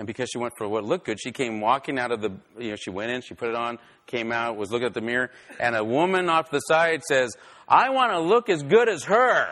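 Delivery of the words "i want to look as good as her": acted, loud, high, drawn-out announcing tone. A woman speaks to the lady helping her, loud voice. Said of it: "telling the lady that's helping her in a loud voice".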